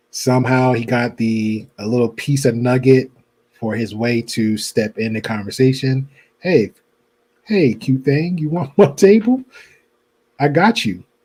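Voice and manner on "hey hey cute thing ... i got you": smooth, offhand, casual flirty tone. Acting out a guy approaching a woman at a table: imitating casual flirting. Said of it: "Probably casually flirted with her".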